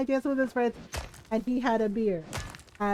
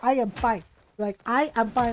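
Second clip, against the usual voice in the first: put-on furious, murderous-sounding voice. Retelling a mother insisting she is fine: imitating mom sounding murderous. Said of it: "You sound like you're ready to kill somebody".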